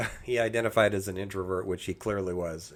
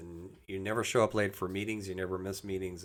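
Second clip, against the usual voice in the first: ordinary talk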